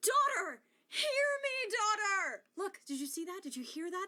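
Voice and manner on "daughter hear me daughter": loud, high, impassioned emotional cry. Saying a line as an actor, calling out to a daughter, with an emotional cry. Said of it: "That was emotion in my voice".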